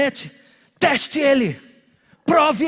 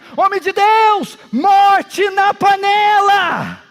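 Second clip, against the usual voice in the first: put-on loud, high alarmed shout, panela stretched out; 7 semitones higher, 5 dB louder than usual. Retelling a story where someone suddenly cries a warning: imitating someone shouting. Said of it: "De repente alguém grita".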